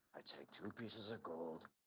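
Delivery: quiet, muttered grumble. A tabletop player voices a character storming off: Dune muttering, storming off. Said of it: "kind of like storming off and muttering".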